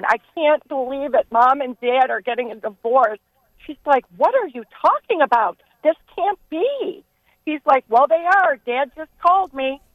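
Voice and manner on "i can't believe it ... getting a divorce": usual speaking voice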